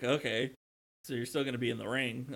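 ordinary talk, nothing marked

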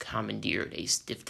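ordinary delivery

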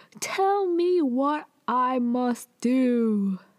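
mock very slow, pressing, insistent yelled delivery. Retelling a drama scene where a character grabs a man's collar: imitating someone yelling. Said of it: "yelling at him".

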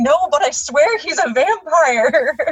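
mock hysterical, pleading insistence, very slow. Retelling how people insist about the neighbor: imitating hysterical insistence. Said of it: "that kind of hysteria of".

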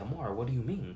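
gently concerned and curious tone. Speaker demonstrating how tone changes a question's meaning, concerned, curious tone. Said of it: "Now I'm conveying concern, curiosity".

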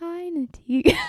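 soft-spoken quiet talking. Demonstrating what being into soft spoken means, soft-spoken quiet talking. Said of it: "Like quiet talking".

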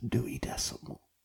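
very quiet, breathy whispered murmur. Imagining a quiet library podcast where someone speaks: imitating a whisper. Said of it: "somebody just whispers".

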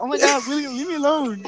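high, wimpy pushover voice. Retelling what Amir said when followed after school: imitating Amir's wimpy voice. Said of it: "With his fucking hot bitch-ass voice".

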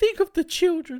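shrill, very high-pitched, loud cartoon voice. Joking about kids missing out on a film: Maude Flanders voice. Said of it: "Insert Mod Flanders saying".

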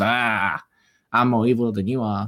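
slow, drawn-out wicked storybook witch voice. Imagining a movie scene with Wanda and Doctor Strange, doing an Agnes impression. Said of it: "a spot on impressions by you".

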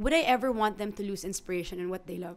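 ordinary delivery

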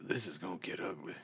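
very soft, low, hushed half-whisper. In a tabletop role-play, a character pulls a companion close and half-whispers to him. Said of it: "I'm going to try and whisper to him".

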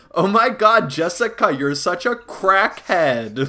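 slow, put-on teenage-girl voice. Speaker retells a dad told to say a line, imitating a teenage girl. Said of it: "he's doing, like, an impression".

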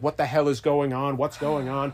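ordinary talk

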